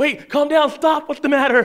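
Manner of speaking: imitated panicked voice, blurted out high and panicky. Speaker imitating nursery workers when a baby starts crying: imitating panicked voice. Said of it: "You can almost hear the panic in their voice".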